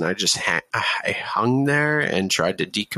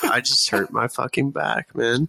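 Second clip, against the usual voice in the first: mock offhand, unbothered, casual nonchalant delivery; 4 semitones higher than usual. Retelling telling a guy at the gym about an injury: imitating own nonchalant tone. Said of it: "I'm just so non-, nonchalant about it".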